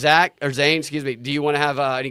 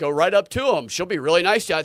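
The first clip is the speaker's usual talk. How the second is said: play-acted snarky, sarcastic, mocking tone; 4 semitones higher than usual. Retelling neighbors' replies to a photo they posted online, retelling sarcastic comments. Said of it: "they all had a sarcastic comment".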